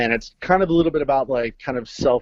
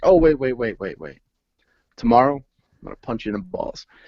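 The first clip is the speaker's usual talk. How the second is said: mock stern, placid, deadpan child voice. Retelling a younger son's bedtime threat to Dad: imitating a stern, placid kid. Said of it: "very stern".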